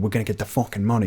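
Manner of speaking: fast put-on cliché movie New York accent. Critiquing a show's clichéd character by quoting his line; New York accent. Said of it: "that New York accent going".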